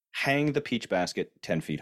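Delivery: plain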